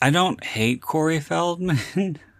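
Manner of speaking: laughing through it. Answering another speaker's question, laughing while speaking. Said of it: "He says with a laugh".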